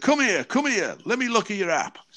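eager, high-pitched voice.

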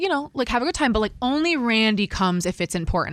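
normal talking voice

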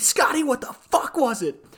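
very high, shrill, very loud screaming screech. Retelling a night of calling out to Scotty; retelling their own screaming. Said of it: "And we just keep screaming".

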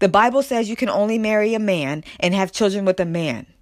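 ordinary delivery

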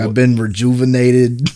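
Midwestern Wisconsin speech. Quoting a buddy from Wisconsin about getting dome: imitating Eric's Wisconsin accent. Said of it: "He's from Wisconsin, so he talks like that".

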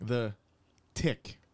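said slowly, drawn out. Naming an old cartoon show to the others: said slowly. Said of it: "I'm gonna say it slowly".

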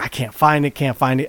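ordinary talk, nothing marked

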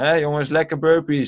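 mock heavy sarcasm. Retelling what was said while everyone waited for team Alpha, mock-sarcastic. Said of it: "En dan ook heel sarcastisch".

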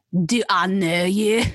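put-on Scottish accent. Taking a turn trying a line in a Scottish accent: Scottish accent. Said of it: "vote whose Scottish accent is better".

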